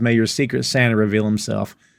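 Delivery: ordinary talk, nothing marked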